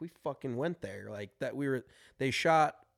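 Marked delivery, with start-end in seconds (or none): none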